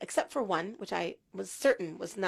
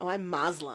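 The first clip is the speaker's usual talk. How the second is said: goofy put-on American accent, trying to sound cool. Retelling a young man's answer about his religion: imitating a funny American accent. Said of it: "in a really funny American accent".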